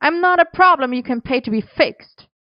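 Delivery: high-pitched, yelled outburst. Merlin argues with Arthur in the kitchen: shouted. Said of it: "Merlin shouted".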